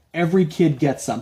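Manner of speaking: usual speaking voice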